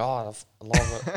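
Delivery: loud, slow, drawn-out put-on British accent. Repeating what the other speaker said in his accent: imitating a British accent. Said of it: "you doing the accent of him".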